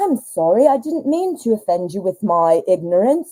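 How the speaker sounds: fake, put-on British English accent. A mom retelling how she answered her kids, in a put-on English accent. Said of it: "You're also not from England".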